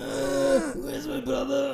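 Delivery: pained, creaky strain, very high, slow. Retelling a character on his knees begging for his brother: imitating a pained straining voice. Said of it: "his voice also gets like".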